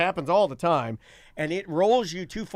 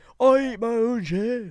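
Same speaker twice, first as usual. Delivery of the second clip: Liverpool accent, pitched up; 5 semitones higher than usual. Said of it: "like a [name] accent".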